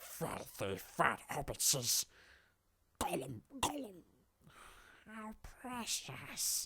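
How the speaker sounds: high creature voice. Showing another way of doing a villain voice, in a Gollum voice. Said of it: "It's like Gollum".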